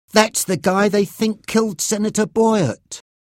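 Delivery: excited exclamation. Sam, shown photos of the men to be bugged, recognizes one; exclaiming. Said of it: "he exclaimed".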